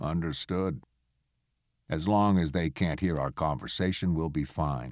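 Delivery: ordinary delivery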